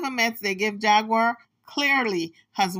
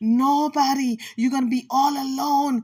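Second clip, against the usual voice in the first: mock whisper, higher pitch; 4 semitones higher than usual. Retelling what a woman told Gerald to scare him: imitating someone whispering. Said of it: "And she's whispering".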